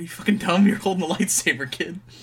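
exasperated scolding.

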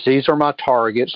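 ordinary delivery

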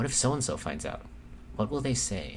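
ordinary talk

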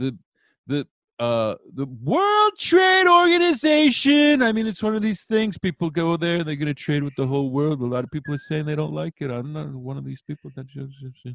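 swooping, rambling delivery that trails off at the end. Showing how a Trump impression goes: loud, then trailing off. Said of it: "my Trump impression".

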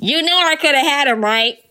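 high voice, as if through a megaphone. Imitating a buzzkill with a megaphone at a parade, in a megaphone voice. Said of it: "Let me do my megaphone voice".

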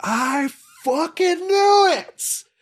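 very high, very slow, loud, drawn-out jeering cry. Describing a crowd pushing in, imitating a crowd member. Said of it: "They're the ones who are just like".

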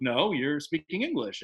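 ordinary talk

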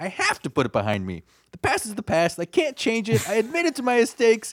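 mock super defensive voice, very high and swooping. Act out a man's reply when someone wants to talk about the future, mock super defensive. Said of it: "he gets super defensive again and is like".

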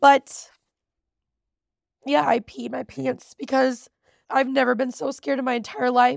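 weeping, tearful, crying through the words. Speaker recording a story for viewers after several retakes, crying. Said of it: "I'm crying".

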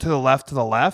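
ordinary talk

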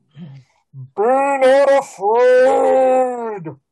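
ear-splitting, booming voice with "afraid" stretched out. Narrating a scene in an alley, address the player in a deafening concert-speaker voice. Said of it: "in a voice that's, you know, sounds like you're standing next to the speakers at like a hairband concert".

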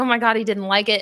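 put-on crying meltdown. Retelling a scene where Mel has a meltdown: imitating someone having a meltdown.

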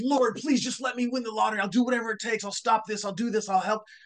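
put-on excited begging. Telling a joke about a man praying to win the lottery: imitating an excited praying man. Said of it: "He's so excited about winning the lottery".

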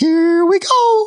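put-on very high, crazed cry in a British accent. Retelling the climbs, the speaker repeats what Wiggins screamed: crazy annoying British Wiggins voice. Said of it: "in this really crazy, annoying British voice".

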